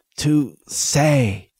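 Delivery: gasped out. A narrator voices a struggling man saying goodbye to a dear friend, gasped. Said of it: "Ness gasped".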